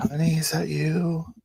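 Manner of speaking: weak, faint voice. Voicing a sick character who greets her partner: faint voice. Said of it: "faint voice".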